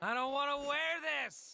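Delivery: upset voice. Refusing to wear something when called up to bat: upset. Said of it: "I have never seen you this upset".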